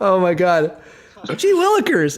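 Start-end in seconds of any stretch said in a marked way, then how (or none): 1.4-2.2 put-on very high, wholesome gee-golly kid voice. Asked to play the rest of his character as a fifties kid actor, gee-golly voice. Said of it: "like a gee golly kind of guy".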